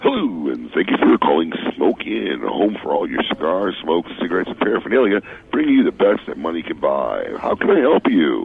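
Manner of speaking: low, movie-announcer-style delivery. Greeting a caller to Smoke Inn on the phone, in a Moviefone voice. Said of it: "so in a movie phone voice".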